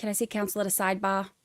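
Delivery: soft practised Boston accent, ah sound toned down. Showing off their accent practice to the others, the speaker uses a boston accent. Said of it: "my Boston accent is getting much better".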